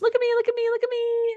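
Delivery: very high, tiny, cute little voice. Describing an inner voice searching for validation, the speaker does a cute little voice. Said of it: "little cute little voice".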